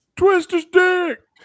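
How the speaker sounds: mock shrill, very high, loud shouted yell. Retelling what Rick kept shouting at a concert: imitating Rick yelling. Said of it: "Rick kept yelling out".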